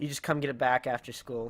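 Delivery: ordinary delivery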